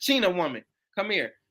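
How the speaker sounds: ordinary talk, nothing marked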